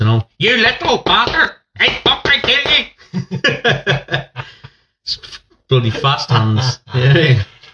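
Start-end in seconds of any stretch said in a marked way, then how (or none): 0.4-4.4 very high yelling, broken into syllables. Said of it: "a mum who'd hit me in syllables".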